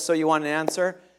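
mock deadpan, straight-faced delivery. Retelling how the bride's father answered with a very straight face: imitating a deadpan reply. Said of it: "a very straight face".

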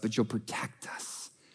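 soft, unvoiced whisper.

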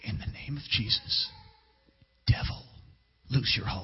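hushed, soft, breathy whisper, barely voiced. Retelling trying a quieter way of praying for deliverance: retelling own whispered prayer. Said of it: "I'm just gonna whisper".

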